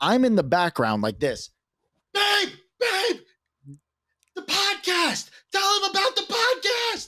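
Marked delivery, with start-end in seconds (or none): 2.1-7.1 very high, shrill, urgent scream. Retelling calling to a partner on the phone from another room: imitating a scream. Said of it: "Screaming from the other room".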